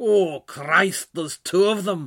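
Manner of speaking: put-on sinister Glaswegian accent. Recounting a voice piping up from the audience, in a put-on sinister Glaswegian heckle. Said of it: "a sinister Glaswegian voice piped up".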